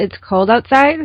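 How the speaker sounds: outside said with a rising, question-like tone. Saying a statement like a question, with a rise at the end on outside. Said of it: "I would raise it like a question".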